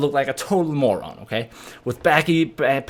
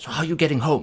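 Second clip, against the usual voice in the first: put-on near-whisper. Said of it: "she's almost whispering to me".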